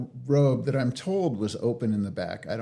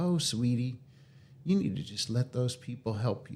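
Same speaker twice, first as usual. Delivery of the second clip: put-on Southern drawl with stretched vowels; 5 dB quieter than usual. Retelling what a nurse said to the speaker, imitating a Southern drawl. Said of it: "had a real like Southern drawl".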